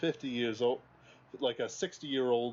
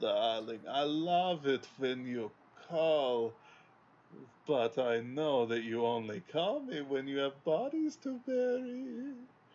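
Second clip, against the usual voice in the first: heavy, put-on, sing-song German accent; 2 semitones higher than usual. Showing how a horror character should say it: German Fraulein accent. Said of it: "it's this German Fraulein accent".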